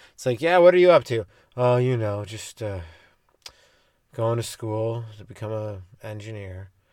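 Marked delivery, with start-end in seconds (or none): 1.6-6.7 acted, bored, low, lifeless monotone drone. Mocking people who talk uninterested in anything: imitating a bored, uninterested person. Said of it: "Don't you hate those people who talk so uninterested in anything? ... You sound bored as fuck".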